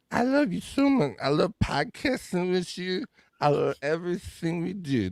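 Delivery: put-on slow, high, fond, gushing happy-drunk voice. Showing what a happy drunk sounds like: imitating a happy drunk. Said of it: "there's a happy drunk".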